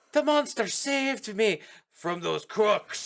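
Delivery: put-on blended Irish-New York accent. Describing a film character who keeps switching accents, quoting him in O'Malley's Irish-New York accent. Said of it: "he switches constantly between an Irish accent and a New York accent".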